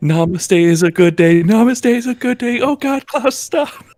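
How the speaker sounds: very high, rising, panicked, frightened shouting. A player voices their character in the background during a fight, afraid yelling. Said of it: "yelling like more and more like afraid".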